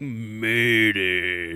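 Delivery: laughing stress on "murder".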